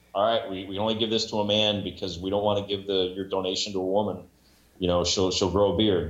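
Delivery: normal talking voice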